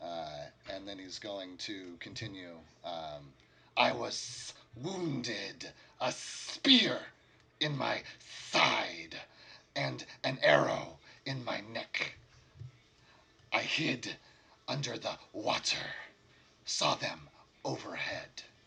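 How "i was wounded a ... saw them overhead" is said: otherworldly-sounding lizard folk creature voice. Voicing a wounded lizard folk telling who fell first: lizard folk voice. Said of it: "His words sound different".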